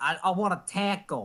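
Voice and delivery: put-on Brooklyn accent, dragged out very slowly. Teasing someone whose 'taco' sounded off, imitating a Brooklyn accent. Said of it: "you sounded like you had a Brooklyn accent".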